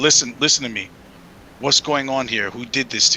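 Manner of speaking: low, brought-down voice. Retelling how he spoke directly to Craig, in a lowered voice. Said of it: "try to lower my voice and talk".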